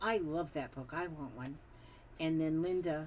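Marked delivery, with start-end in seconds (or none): none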